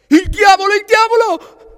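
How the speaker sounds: very loud, very high terrified shout. Narrator reading a story, Papageno sees a giant man appear: shouting in terror. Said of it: "gridò Papageno terrorizzato".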